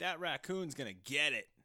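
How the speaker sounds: booming, loud, high-pitched holler. Describing a man in the theater, retelling a man's yell. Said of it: "He was like yelling".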